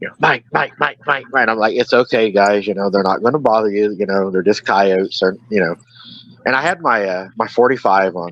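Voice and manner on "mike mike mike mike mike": frightened, repeated calling out. After hearing coyotes howl, retelling the others' frightened calls: imitating scared people calling out. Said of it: "it scares them".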